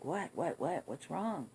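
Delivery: acted half-awake, groggy just-woken man's voice. Retelling how a sleeping man finally answered, imitating a just-woken man. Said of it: "he opens his eyes and he's like".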